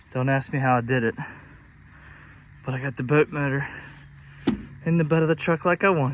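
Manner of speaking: breathless, winded voice. After loading a boat motor into a truck, the speaker talks out of breath. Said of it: "I'm out of breath".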